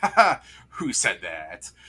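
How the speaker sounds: slow, static-tinged words through a strange laugh. Voicing a boss answering a player's cast message, with a strange laugh while talking. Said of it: "strange, like laugh".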